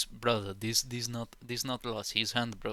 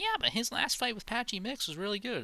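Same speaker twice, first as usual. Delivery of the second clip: deliberately poor, very high-pitched put-on voice; 11 semitones higher than usual. Imitating a commentator praising a fighter's last fight: Joe Rogan impression. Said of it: "That's my Rogan impression".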